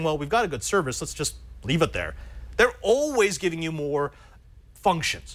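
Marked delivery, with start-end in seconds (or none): none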